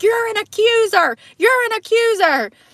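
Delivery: put-on shrill scream, pitched very high. Retelling a woman in a video confronting a man: imitating a woman screaming. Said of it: "she starts screaming at him".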